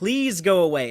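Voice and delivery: put-on begging, slowed down. Describing a recorded conversation, speaker acts out the man's words, imitating someone begging. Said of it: "He's basically begging him".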